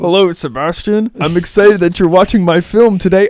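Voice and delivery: put-on loud, very boyish voice that hasn't broken. Greeting a viewer by name as Spider-Man: Spider-Man voice like pre-puberty. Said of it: "why do you sound like you haven't hit puberty yet?".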